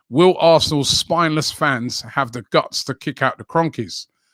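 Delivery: plain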